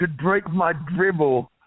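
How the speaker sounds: put-on British accent. Recounting a diva's tweet about a fan's request: Paige British accent impression. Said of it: "as she would say in her British tone".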